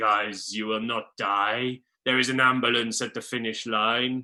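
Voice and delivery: put-on deep, low-pitched German accent. Speaker quoting their coach Jurgen Grobler to the crew, in a deep German accent. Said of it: "deep German accent".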